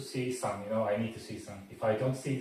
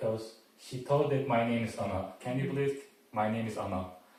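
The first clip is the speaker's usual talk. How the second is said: ordinary talk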